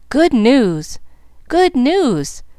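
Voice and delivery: joyful, glad, high-pitched calling out. Ralph leaps from the boat and runs up the slope waving his hat, calling in a glad voice. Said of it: "calling in a glad voice".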